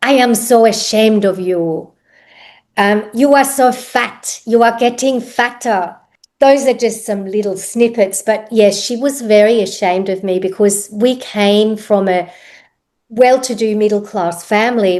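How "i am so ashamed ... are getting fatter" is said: put-on harsh, scolding voice with heavy German accent. Quoting what a woman would say to the speaker, harsh German accent. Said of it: "she had a very strong German accent, harsh German accent".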